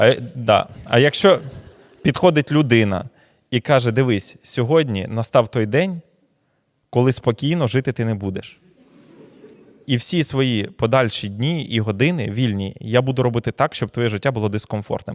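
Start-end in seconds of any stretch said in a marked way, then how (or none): none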